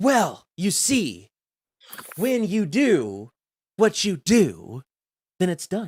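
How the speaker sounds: very slow, sing-song, drawn-out words with swooping pitch. Mocking a friend's halting sentence with a William Shatner impression. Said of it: "that was his William Shatner impression".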